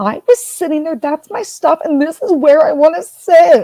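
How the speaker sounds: high, insistent, screaming rant. Speaker retells a woman screaming at an old man over her seat, imitating her screaming. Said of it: "And she is screaming".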